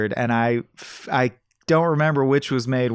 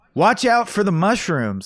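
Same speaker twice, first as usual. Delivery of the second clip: high-pitched shout; 6 semitones higher than usual. Retelling a film scene where a character watches a game, imitating Beau Bridges shouting.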